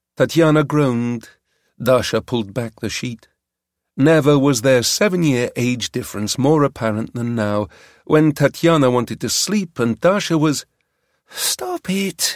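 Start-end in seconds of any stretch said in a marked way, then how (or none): 11.3-12.4 soft mutter under the breath. Tatiana, wanting to sleep, pulls the sheet back from Dasha, muttering. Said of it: "Tatiana muttered".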